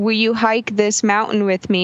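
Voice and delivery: ordinary talk, nothing marked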